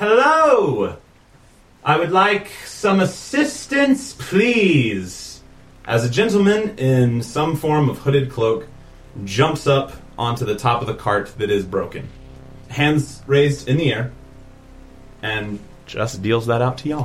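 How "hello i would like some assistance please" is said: very slow, high shout, please stretched long. Narrating a hooded gentleman on a broken cart calling to the group, shouting through the rain. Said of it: "you just hear a voice shout out through the rain".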